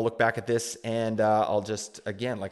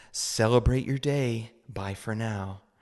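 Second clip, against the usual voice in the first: put-on calm, soothing meditation-guide voice. Quoting a woman's message sign-off, imitating a soothing voice. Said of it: "she had a voice that was very uh, soothing".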